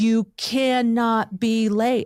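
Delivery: imitated yelling. Retelling what he said in the car: imitating him yelling. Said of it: "'cause he was yelling".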